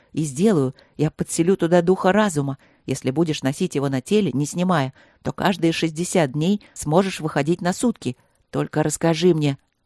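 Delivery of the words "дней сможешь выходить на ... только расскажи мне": plain reading voice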